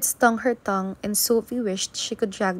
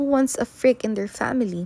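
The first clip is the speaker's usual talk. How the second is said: plain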